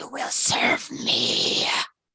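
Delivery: very slow, looming, menacing creature whisper. Voicing a monstrous beast that whispers to a player: menacing monster whisper. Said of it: "it whispers to you".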